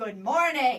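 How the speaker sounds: very low, deep, authoritative voice. Demonstrating step one, a voice of authority: low and loud. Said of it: "Voice of authority, low and loud, like this".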